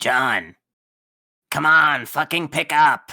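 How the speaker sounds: put-on smoky character voice. Acting a scene, calling someone who must pick up: smoker Terezi voice. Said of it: "I love doing Terezi's voice".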